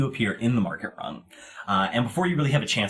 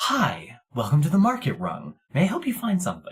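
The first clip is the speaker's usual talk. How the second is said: eerily cheerful, creepy sing-song voice; 4 semitones higher than usual. Voicing two market greeters speaking in creepy perfect unison: creepy cheerful greeting in unison. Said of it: "in almost creepy, perfect unison".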